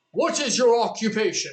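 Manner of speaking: grand, cartoon-style pharaoh character voice. Retelling a Bible story, Pharaoh questions the brothers: Yu-Gi-Oh Pharaoh voice. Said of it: "my best Pharaoh from Yu-Gi-Oh voice".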